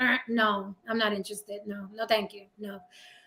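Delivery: firm, flat, cold, no-nonsense delivery. Retelling how men who ask are turned down: imitating own cold refusal. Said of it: "the older you get, you're like".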